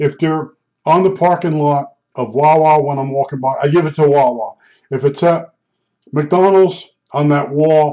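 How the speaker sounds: usual speaking voice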